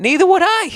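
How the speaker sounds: very high, sudden leap up in pitch. Agreeing with the other speaker on a podcast, voice jumping up high. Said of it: "Why did my voice go up so high?".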